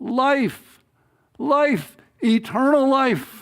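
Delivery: drawn-out, high, slow calling cry. Retelling a story where a pilgrim keeps going: imitating someone crying out. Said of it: "he just started crying".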